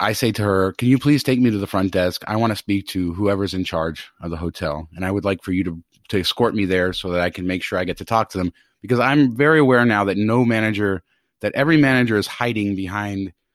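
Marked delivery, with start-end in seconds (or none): none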